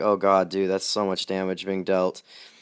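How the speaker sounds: ordinary talk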